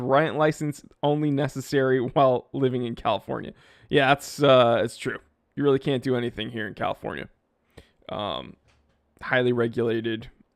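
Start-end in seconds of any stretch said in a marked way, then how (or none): none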